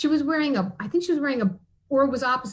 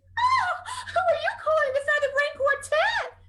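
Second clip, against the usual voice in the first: very high, clucky barnyard hen voice. Reading a farm story aloud, voicing the hens' retort in a clucking hen voice. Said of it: "Clucked the hens".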